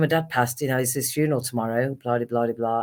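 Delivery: plain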